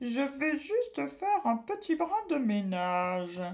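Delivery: sneaky, sniggering, high and swooping. Answering a boy who orders her out of his stomach, snickering slyly. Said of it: "ricana-t-elle sournoisement".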